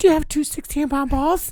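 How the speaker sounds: put-on squeaky teenage voice. Retelling his own phone call asking a guy a question, in a squeaky pubescent voice. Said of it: "with a little squeaky, pubescent voice".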